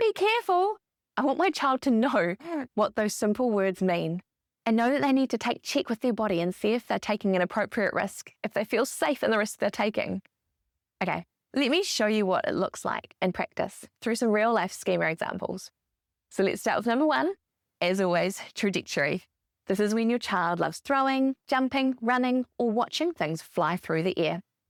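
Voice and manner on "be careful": loud yelling. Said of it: "yells out".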